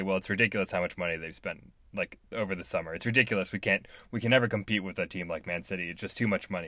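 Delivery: ordinary talk, nothing marked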